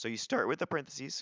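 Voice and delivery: cracked voice breaking mid-line. Explaining the next step out loud, with a voice crack. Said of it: "that was a good voice crack".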